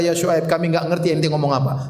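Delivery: plain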